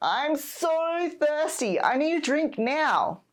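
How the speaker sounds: put-on high, drawn-out, whiny childlike voice. Acting out a child asking for a drink: imitating a whining child. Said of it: "But they start whining".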